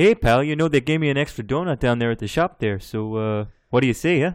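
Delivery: put-on Canadian accent. Doing an impression of how everyone in canada talks: stereotypical canadian accent. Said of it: "Everyone just walks around going".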